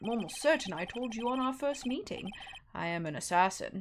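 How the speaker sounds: put-on British accent. Reading a scene aloud, voicing one character in a british accent. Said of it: "I'm gonna make this guy have a British accent".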